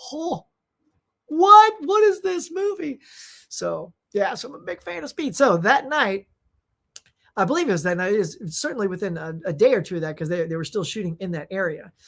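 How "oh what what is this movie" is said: high, loud disbelieving outburst. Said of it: "I'm like".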